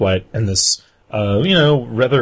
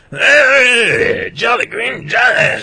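put-on very high, eighty-year-old cigarette smoker's voice; 12 semitones higher, 3 dB louder than usual. Retelling what an old guy shouted while walking past, in an 80-year-old cigarette voice. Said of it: "80-year-old like cigarette voice".

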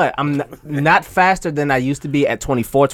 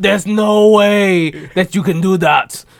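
put-on Austrian bodybuilder accent, higher and louder; 5 semitones higher, 4 dB louder than usual. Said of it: "Y'all accent".

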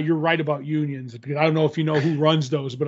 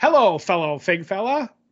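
put-on old-timey, vintage radio broadcaster voice and delivery; 4 semitones higher than usual. Joking with another host on a comic book podcast, in an old-timey radio voice. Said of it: "that's my old timey radio voice".

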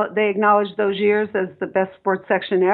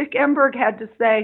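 ordinary talk, nothing marked

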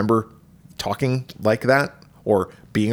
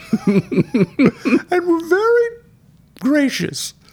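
put-on puckered-lip voice, higher pitched; 4 dB louder than usual. Joking about talking sphincters: put-on Julia Child voice. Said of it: "Why do you talk like that?".

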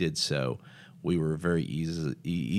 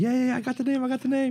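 acted, all worked-up excitement, very high and loud; 5 dB louder than usual. Retelling a man jumping back into the car, imitating someone all excited. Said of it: "He's all excited".

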